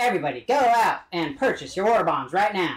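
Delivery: put-on classic vintage old-time radio announcer delivery. Demonstrating what the classic, ye old radio voice sounds like: old-time radio voice. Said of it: "That classic, like, ye old radio voice. ... it kind of sounds like this".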